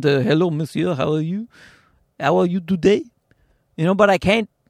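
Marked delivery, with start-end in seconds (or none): 0.0-3.0 fake French accent in English. Showing off doing accents in English, put-on French accent. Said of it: "I could do a French accent".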